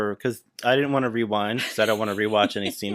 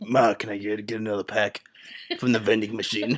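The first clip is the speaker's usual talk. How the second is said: put-on child voice with a smoker's voice. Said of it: "a smoker's voice".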